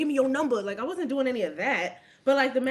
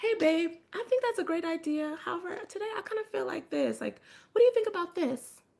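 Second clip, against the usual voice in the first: sweet, cutesy, pitched-up tone; 5 semitones higher, 4 dB quieter than usual. Showing how to suggest your own plan to a partner: cute. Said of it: "Get cute".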